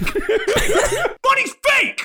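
very slow, very high, drawn-out swooping yell. Voicing a character throwing a fire hydrant at a bank: shouting. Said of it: "I'm shouting".

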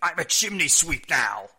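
booming, loud, high, slow and drawn-out delivery. Joking about a stranded wrestler walking around Piccadilly Circus: Marc Mero impression. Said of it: "That's my Marc Mero impression".

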